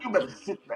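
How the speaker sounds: very high-pitched, shrill, irritable, short-tempered snap. Retelling snapping at the kids when fasting: imitating own mean short-tempered self. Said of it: "that's me on those first three days".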